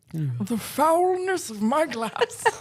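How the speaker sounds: put-on very proper, distinguished old man voice. Reading an old character's line aloud while others react, in a deep old man voice. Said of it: "you turned into an old man".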